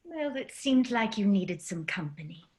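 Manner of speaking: put-on British-accented voice. In an acted scene, a voice appears beside Nell in a cosmic void: British accent. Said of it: "British voice appears in the cosmic void".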